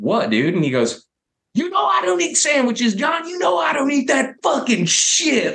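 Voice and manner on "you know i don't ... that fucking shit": honky-tonk drawl, pitched way up. Recalling Justin refusing the sandwiches they brought: imitating Justin's honky-tonk drawl. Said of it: "so like, honky-tonk the way he said it".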